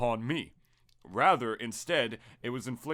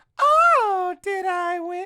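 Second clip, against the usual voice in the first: exaggerated girly voice, very high, shrill, loud, stretched "oh"; 11 dB louder than usual. Explaining why Peach's lines were recorded first, the speaker does Peach's exaggerated girly voice. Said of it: "exaggerated girly girl voice".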